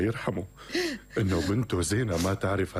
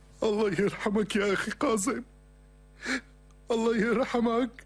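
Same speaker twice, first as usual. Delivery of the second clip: very high-pitched weeping, crying voice; 14 semitones higher than usual. A doctor calls from the hospital, and a man learns his brother Qasim died: crying. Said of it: "ليش عم تبكي [name]؟".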